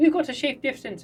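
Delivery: sudden Irish lilt, very high pitched. Voicing a pilot telling harvesters to get off the ship: irish accent. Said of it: "I don't know why she's Irish all of a sudden".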